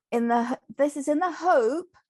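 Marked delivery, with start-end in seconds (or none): 1.3-1.8 hope leaned on hard, strongly stressed. Speaker defining gambling, working through the definition: stressing the word hope. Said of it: "I emphasize the word hope".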